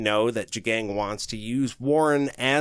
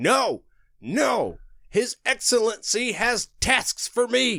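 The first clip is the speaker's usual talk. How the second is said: play-acted very high, slow, drawn-out held-back scream; 9 semitones higher than usual. Reading aloud a book scene where a character starts screaming: retelling a character's screaming. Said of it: "He's screaming".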